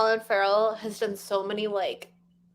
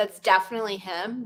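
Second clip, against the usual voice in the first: normal talking voice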